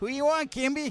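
squeaky, high-pitched voice. Retell a hockey scrum where an opponent challenges you to fight, in Dave Brown's squeaky voice. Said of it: "Dave Brown in his squeaky voice goes".

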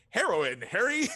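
very chipper voice, high-pitched and loud. Recapping a scene, quoting Coop talking to Harry, in Coop's super chipper voice. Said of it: "in like the most chipper possible voice".

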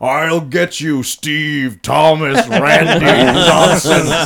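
slow, very loud, booming, drawn-out mummy villain bellow. Retelling the ending of the Mummy ride: imitating the ride's mummy. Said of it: "the mummy's there going".

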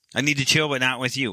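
ordinary talk, nothing marked

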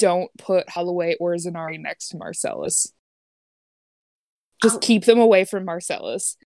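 hushed, half-whispered stage whisper. Voicing a character asking her mother to keep others away: half-whispering in character. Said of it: "And she wants to whisper".

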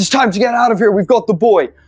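shouting in a put-on character voice. Voicing a character fleeing guards with a boy: shouting as Arnar. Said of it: "As Arnar shouts".

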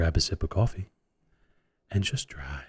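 mock calm, soothing radio voice. Opening the show on request in a put-on soothing voice. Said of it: "Mike's actually has got a soothing voice when he, when he wants to".

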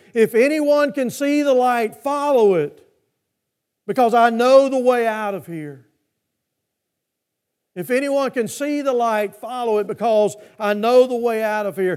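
loud, yelled call. Speaker retells a man with a flashlight calling out in the smoke, retelling a loud yell. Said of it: "yelled out in a loud voice".

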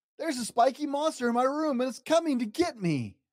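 high, scared, frightened crying out. Narrator reads Little Bear calling to Big Bear about a monster, crying out in fear. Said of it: "Cried Little Bear".

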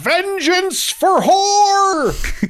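high, slow, drawn-out battle cry scream.

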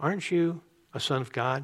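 very sweet gentle tone. Acting out a wife encouraging her discouraged husband: said very sweetly. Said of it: "she can then very sweetly say to him".

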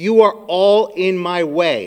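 put-on, very stern, firm, commanding, no-nonsense delivery. Amid the chaos, retelling what his wife said, imitating a very stern voice. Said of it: "my wife said in a very stern voice".

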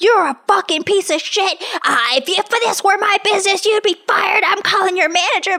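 furious, high-pitched screaming tirade at top of lungs. Retelling a lady screaming at a friend over a wrong order, retelling a scream at full volume. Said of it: "screaming at her at the top of her lungs".

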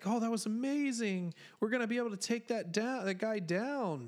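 put-on excited gushing. Retelling a scene with Anakin and Palpatine, the speaker does imitating excited Anakin. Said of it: "Anakin's kind of excited".

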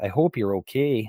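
put-on, very strong Canadian accent. Quote a throwaway line that Dan Aykroyd said, in Dan Aykroyd's very Canadian accent. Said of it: "said in a very Canadian accent".

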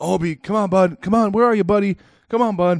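very high-pitched, anxious, worried calling. Retelling searching everywhere for a lost dog, retelling anxious calls to the dog. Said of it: "and I'm just".

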